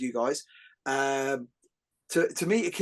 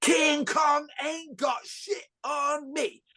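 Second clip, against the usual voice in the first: mock full-on shout, very high and loud; 12 semitones higher than usual. Retelling what he shouts in class while grappling, shouting like Alonzo from Training Day. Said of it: "start shouting like".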